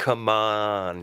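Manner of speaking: imitated drawn-out ah. Praising someone's impression, repeating his drawn-out ah sound. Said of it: "getting getting the ah sound as well".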